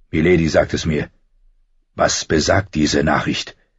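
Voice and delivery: ordinary delivery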